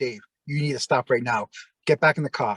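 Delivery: mock-calm, acted calm tone. Retelling how Anthony came up and told him to get back in the car, imitating Anthony very calm. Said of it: "Anthony very calmly comes up to me and goes".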